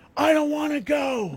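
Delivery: mock very high, drawn-out, top-of-the-lungs yell. Retelling refusing to leave a show as a child: retelling a childhood yell. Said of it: "at the top of my lungs and I just yell".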